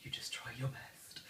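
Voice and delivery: soft, whispered aside.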